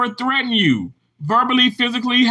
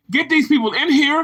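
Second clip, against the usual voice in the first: plain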